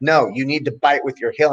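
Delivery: mock instructor-style yelling. Retelling an instructor correcting a grappling move: imitating instructor yelling. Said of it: "my instructor's yelling at me".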